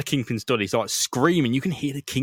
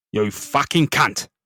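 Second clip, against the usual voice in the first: big, fat Cockney geezer voice; 3 dB louder than usual. Asked for a Kingpin voice, answering in fat Cockney geezer Kingpin voice. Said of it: "fattest Cockney geezers you can".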